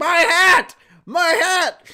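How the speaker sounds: shrill, very high, very loud, long howling scream. Retelling a behind-the-scenes story about Luffy on set: imitating Luffy screaming. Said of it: "as Luffy is just screaming".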